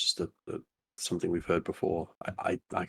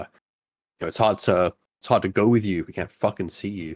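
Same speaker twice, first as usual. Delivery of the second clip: raised voice, pushed a touch too loud; 6 dB louder than usual. Acting out a character calling out indoors early in the morning, voice raised a bit too loudly. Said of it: "raise his voice probably a little bit too loudly".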